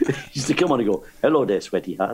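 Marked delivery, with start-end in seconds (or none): 1.2-2.1 put-on Spanish accent, much lower pitch. Recalling a comedian on the same bill, imitating Pancho Villa's Spanish accent. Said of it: "he's speaking the Spanish accent".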